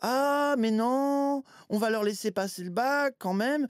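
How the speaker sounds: high-pitched, mocking put-on impression voice.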